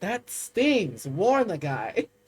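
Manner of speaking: taken-aback yet amused, quipping tone. Narrating the game, the speaker voices the man singed by the healing, amused, taken aback. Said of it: "he kind of smiles as he gets taken aback and goes".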